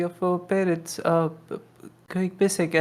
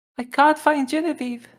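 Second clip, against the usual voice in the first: put-on high, childlike voice on the verge of crying; 8 semitones higher than usual. In a game scene, a boy runs up and tugs a sleeve, almost crying. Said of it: "almost crying".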